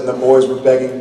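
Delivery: plain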